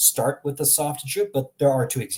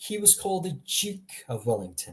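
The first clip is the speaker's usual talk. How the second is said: British pronunciation of "duke" as "jook", softer. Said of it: "these are the only examples I can find".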